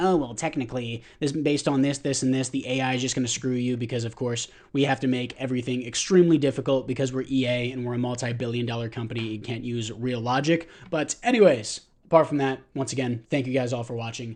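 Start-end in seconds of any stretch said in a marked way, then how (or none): none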